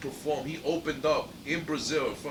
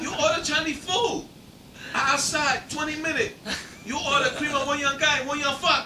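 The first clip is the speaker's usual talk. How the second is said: high-pitched, very bad Chinese accent. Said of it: "in the worst Chinese accent you ever heard".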